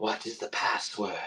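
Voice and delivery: barely audible, very quiet, breathy whisper. Voicing a hidden voice behind a door asking for the password: whispering voice. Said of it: "a voice whisper".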